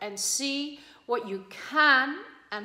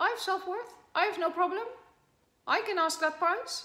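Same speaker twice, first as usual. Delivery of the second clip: defensive, protesting, pitched-up insistent voice; 6 semitones higher, 4 dB quieter than usual. Acting out someone's hidden self-talk about self-worth, imitating a defending voice. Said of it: "It's a defending voice".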